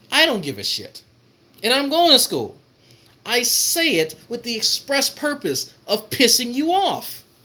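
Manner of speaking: worked-up, excited, hyped-up high-pitched delivery. Ranting to folks about mentioning school on purpose: too loud, hyped up. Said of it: "I'm too loud, folks. I'm getting too hyped".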